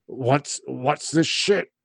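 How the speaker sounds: gritty, rough, gravel-throated voice. Telling a story, voicing the man in the recliner in a gravelly voice. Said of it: "you hear this gravelly voice just come from like the seat".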